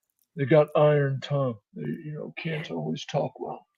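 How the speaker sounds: soft, hushed whisper. Game master voicing a character who leans over to a player, whispering. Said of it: "he just whispers to you".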